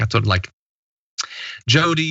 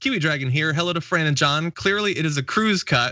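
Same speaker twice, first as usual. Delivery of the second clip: ordinary delivery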